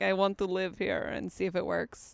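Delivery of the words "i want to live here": put-on Russian accent. Joking about fooling people into marriage: put-on Russian accent. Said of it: "literally putting on a Russian accent and being like".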